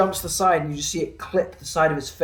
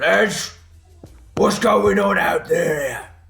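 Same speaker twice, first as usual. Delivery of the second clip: slow, booming bellow; 2 semitones higher, 5 dB louder than usual. A game master voicing someone calling from deep inside a cavern, booming voice. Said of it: "a sort of a booming voice".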